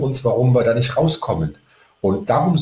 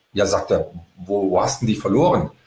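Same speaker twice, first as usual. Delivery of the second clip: ordinary talk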